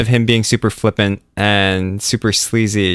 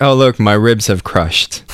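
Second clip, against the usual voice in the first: plain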